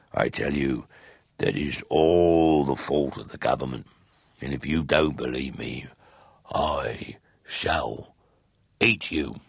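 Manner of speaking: low, growled, beastly wolf voice. Narrator voices the wolf answering the turtle doves, in a growling wolf voice. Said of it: "growled the wolf".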